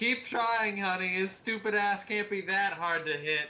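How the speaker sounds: screamed, taunting, pitched way up. Voicing a character screaming back at someone shooting from a shop: screaming back in character. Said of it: "I'm gonna scream back".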